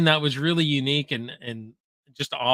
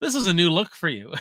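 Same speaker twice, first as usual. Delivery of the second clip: mock sarcastic, deadpan delivery; 2 semitones higher than usual. Retelling a movie scene where Bill Murray checks on her: imitating Bill Murray being sarcastic. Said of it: "he's just so sarcastic".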